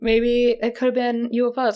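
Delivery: talking through a yawn. Chatting on the first cloudy day in weeks, yawning. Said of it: "I'm sorry, I'm yawning".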